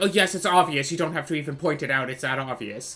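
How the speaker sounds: mock rude dismissive tone. Imitating someone brushing off an obvious remark: imitating a rude dismissive reply. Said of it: "that just feels rude".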